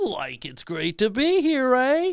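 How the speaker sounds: very high, swooping goofy cartoon sidekick voice. Two performers improvise a conversation, the speaker taking the Shaggy role: Shaggy voice. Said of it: "I'll be Shaggy".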